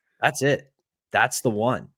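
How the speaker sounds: normal talking voice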